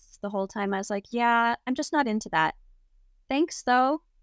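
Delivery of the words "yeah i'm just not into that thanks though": acted matter-of-fact dismissive tone, straight-faced, never cracking. Retelling own straight-faced refusal to a threatening man: retelling own straight-faced reply. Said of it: "I just kept a really straight face".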